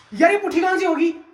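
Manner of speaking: shouting. Reacting while playing a game with others, yelling. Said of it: "क्यों चिल्ला रहा है?".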